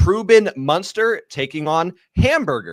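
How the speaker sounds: put-on American accent with plain delivery. Announcing the second bet of the match day in an american accent. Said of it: "I'm going to do this one in an American accent".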